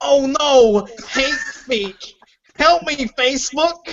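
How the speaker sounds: put-on nerdy voice, laid on, high and slow. Reading the phrase hate speech aloud, in a put-on nerdy voice.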